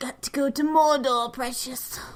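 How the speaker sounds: loud, high-pitched creature voice.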